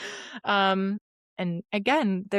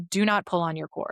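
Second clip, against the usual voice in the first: put-on condescending, patronizing tone. Retelling a nurse's instruction after the birth, imitating a condescending tone. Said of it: "the nurse very condescendingly was like".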